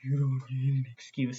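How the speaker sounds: unsettling, creepy, half-whispery stage whisper. Describing an uncomfortable kissing scene, imitating a half-whispery creepy voice. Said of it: "It's like whispery and creepy".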